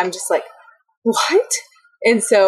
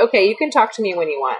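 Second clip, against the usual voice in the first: put-on snippy, bitchy tone. Retelling what the speaker told a man who stopped talking: retelling own bitchy tone. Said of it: "I sound like such a bitch talking like this".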